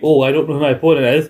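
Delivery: plain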